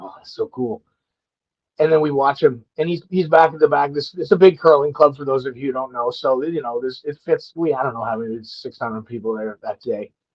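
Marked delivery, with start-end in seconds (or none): 0.0-0.8 put-on mutter, lower and quieter. Retelling seeing a childhood hero arrive, retelling muttering under breath. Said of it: "I say under my breath to Cody".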